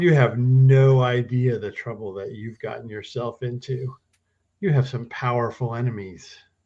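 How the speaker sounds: smirking, self-satisfied tone. Narrator voices a character leaning forward at the player, smug smirking. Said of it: "he kind of leans forward and smirks at you".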